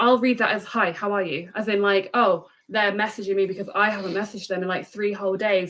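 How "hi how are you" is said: put-out, pissy, annoyed, irritated tone. Reading somebody's text the way she hears it on a stressful day, mock pissy tone. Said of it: "they're now pissy at me".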